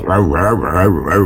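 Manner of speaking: mock American accent, low, rapid, rattled-off barking gibberish "rau rau".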